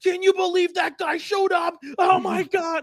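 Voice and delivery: play-acted, very high, worked-up excited nerd shout. Imitating nerds losing their minds over a trailer: imitating nerds excitedly yelling. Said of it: "why are you yelling that much".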